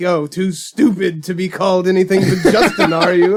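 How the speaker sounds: scornful, contemptuous, judgmental sneer, acted out. Acting out a reaction to a movie character's name: judgmental sneer like Rip Torn. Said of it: "It sounds like you're channeling your inner Rip Torn".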